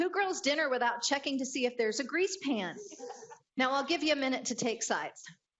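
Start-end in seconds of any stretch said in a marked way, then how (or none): 0.0-2.8 loud yelling, called out across a distance. Retelling a husband's yelled reply about checking the grease pan: imitating husband yelling back. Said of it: "my husband yells back".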